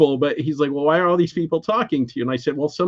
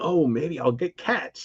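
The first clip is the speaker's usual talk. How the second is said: happy, pleased, delighted tone; 6 dB quieter than usual. Retelling a talk with a neighbor about her cats: imitating own happy past self. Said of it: "all happy".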